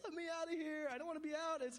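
put-on crying, begging shout, very high and tearful. Recalling being inconsolable and yelling at parents, retelling a crying yell. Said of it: "I'm yelling at my parents".

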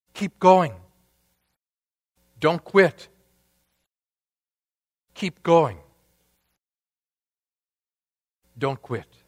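urging, insistent stage whisper. Retelling a man at the piano encouraging a little boy playing, stage whisper. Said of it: "whispering in a stage whisper".

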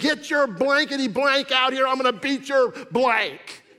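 play-acted, all-out screaming at the top of the lungs. Retelling shouting at an attacker in a parking lot: retelling own scream. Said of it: "I'm screaming".

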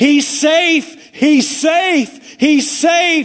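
put-on loud, high screaming coach, every word very drawn out. Retelling a baseball story, a coach runs out: imitating a screaming coach. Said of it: "runs one of the coaches screaming".

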